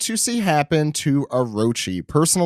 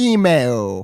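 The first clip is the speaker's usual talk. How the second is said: put-on cartoon character voice; 3 semitones lower than usual. Doing the voice after others refuse: Homestar Runner voice. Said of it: "That's what he sounded like".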